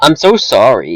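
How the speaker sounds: weak, failed put-on Canadian accent. Quoting a movie scene in a Canadian accent: attempted Canadian accent. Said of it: "I can't do Canadian accent".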